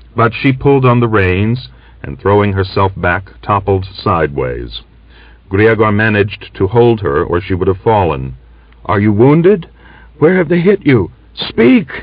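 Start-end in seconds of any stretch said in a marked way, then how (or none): 8.8-12.0 strained, husky, hoarse, very high voice. Grigor, holding Aksinya after she topples sideways, asks hoarsely. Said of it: "he asked hoarsely".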